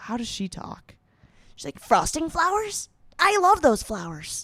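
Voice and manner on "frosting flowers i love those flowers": grating, annoying little cartoon unicorn voice. Describing a group of animal characters, doing an annoying little unicorn voice. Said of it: "a fuck ass little unicorn who has an annoying voice".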